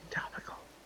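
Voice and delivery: hushed, soft whisper kept low. Comparing a loud whisper with a quiet one, now a quiet whisper. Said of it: "if I quiet whisper like this".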